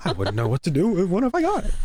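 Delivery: frantic, high voice with pitch swooping all over. Quoting Joker's line about the dog chasing cars: frantic Joker impression. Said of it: "I like the franticness in your impression there".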